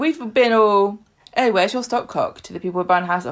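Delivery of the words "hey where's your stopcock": ordinary talk, nothing marked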